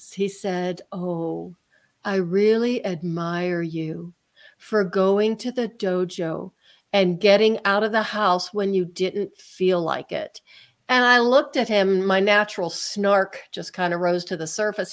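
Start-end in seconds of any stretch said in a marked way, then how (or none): 0.9-10.4 gentle, calming, soothing voice. Recounting the therapist's reply about going to the dojo, imitating the soothing therapist voice. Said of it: "that soothing therapist voice".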